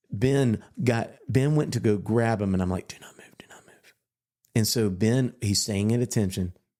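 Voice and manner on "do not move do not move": very quiet, barely audible hiss under the breath. Speaker retells a moment during a soldier's inspection, retelling a whisper under breath. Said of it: "I'm whispering under my breath".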